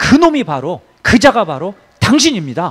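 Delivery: loud, pointed, accusing tone. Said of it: "이렇게 지적하는 거죠".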